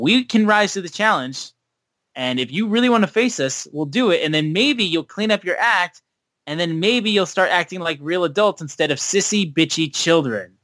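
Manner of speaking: ordinary talk, nothing marked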